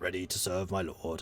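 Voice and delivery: gruff, grunting knight character voice. Trying to do the other voices, the speaker attempts a grunty knight voice. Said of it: "can't quite get the gruntiness of the knight".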